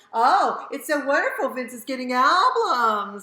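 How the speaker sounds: booming, very loud, sarcastic, with fake delight. Telling the other speaker how their remark sounds; imitating their sarcastic tone. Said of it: "It has a a sarcastic connotation to it".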